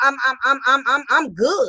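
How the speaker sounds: gleeful, swaggering, proud, joyful tone. Retelling an inmate's reply to being written up: imitating a proud, joyful boast. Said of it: "with so much joy and pride".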